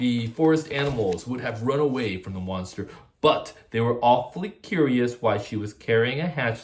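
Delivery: ordinary delivery, nothing marked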